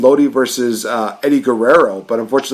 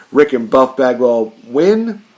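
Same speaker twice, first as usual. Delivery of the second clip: ordinary delivery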